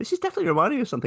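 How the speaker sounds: rapid, excited, high-pitched, rattled off.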